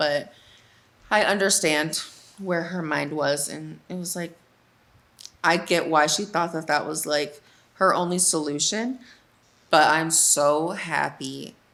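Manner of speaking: slow, reining in welling, held-back emotion. Talking about a girl's struggle, the speaker is fighting back emotion. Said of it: "I'm trying not to get emotional right now".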